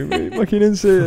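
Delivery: put-on sarcastic relaxed voice. Recalling a guest's videos answered with a filter, imitating Paola's sarcastic filter voice. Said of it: "imagínate con esa voz de que".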